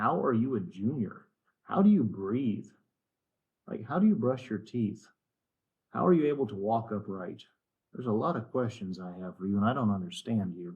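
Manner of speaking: incredibly heavy sarcasm with swooping pitch, put-down tone. Going over a missed test problem, addressing the kid: incredibly sarcastic. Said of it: "'Cause I'm being incredibly sarcastic here".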